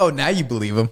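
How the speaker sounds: normal talking voice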